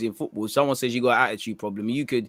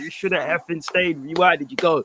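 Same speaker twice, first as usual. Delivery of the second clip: mock screaming, called out loud, pitched up; 5 semitones higher than usual. Retelling a reaction to a video, imitating screaming at a phone. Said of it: "I was screaming at my phone like".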